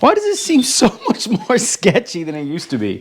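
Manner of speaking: breaking voice, cracking up high in pitch. Talking to viewers while getting ready to come down, voice cracking. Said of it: "Anybody hear my voice crack right there?".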